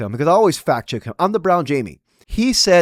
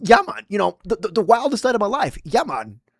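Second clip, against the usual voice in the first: awed, high, gushing voice; 5 semitones higher than usual. Mocking Joe Rogan's praise of the night: imitating Joe Rogan in awe. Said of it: "And now he's like".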